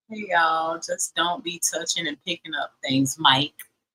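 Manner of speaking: ordinary talk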